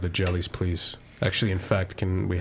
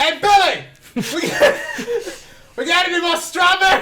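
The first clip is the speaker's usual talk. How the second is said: put-on waitress shout, higher and louder; 11 dB louder than usual. Imitating the waitress Linda calling to the kitchen, imitating Linda calling out. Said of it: "I feel like she would just say that".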